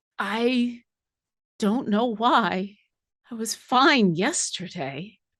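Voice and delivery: worn-out, drained, exhausted voice. A game master voices a woman the players overhear: Marissa Huepe, exhausted. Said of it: "She sounds exhausted".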